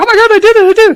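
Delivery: put-on thrilled, shrill, high, loud gushing burst. Retelling a patient's report of trying it out: imitating someone excited. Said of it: "she was all excited".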